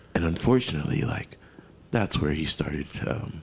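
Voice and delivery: soft, low-toned, calm voice. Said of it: "tearing this motherfucker down in a low-tone voice".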